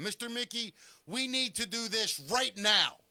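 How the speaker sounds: said in complete seriousness. Retelling what Owen once said to him: imitating Owen. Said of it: "can I do an impression of you".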